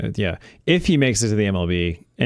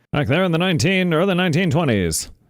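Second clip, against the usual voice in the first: put-on old-timey voice, much higher; 7 semitones higher than usual. Talking about Babe Ruth's era in baseball, old-timey voice. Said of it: "I love your old timey voice".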